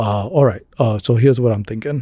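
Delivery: no-nonsense, down-to-business, serious businesslike voice. Retelling the first morning call at work: Bernie Sanders impression. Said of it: "That's an unbelievable impression".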